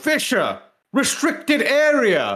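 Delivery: very high, swooping put-on shout, area drawn out. Retelling a video game guard who catches the player: imitating an NPC guard shouting. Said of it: "an N P C, who's standing there who goes".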